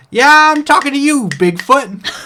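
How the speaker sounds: very high, loud, sassy little oyster voice. Voicing an oyster under the sand scolding a player: sassy oyster voice. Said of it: "its shell moves in rhythm with its voice".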